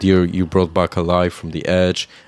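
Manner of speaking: usual speaking voice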